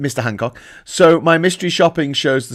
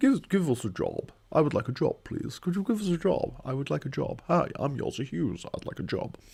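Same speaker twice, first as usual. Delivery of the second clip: soft, put-on posh upper-class accent; 13 dB quieter than usual. Asking for a job, after offering to sound posh: put-on posh voice. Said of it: "I'll sound posh if you want me to".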